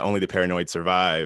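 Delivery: ordinary talk, nothing marked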